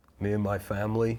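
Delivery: put-on Boston accent, like a Boston man. Quoting a movie line about a threat to family: Russell Crowe impression with Boston accent. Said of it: "that's how he says it".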